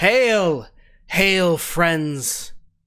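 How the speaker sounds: loud calling out, projected across a distance. Voicing someone below who calls out a greeting: calling out from a distance. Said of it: "calling back out".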